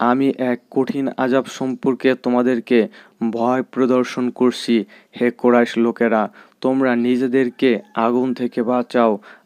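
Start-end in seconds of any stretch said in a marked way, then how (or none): none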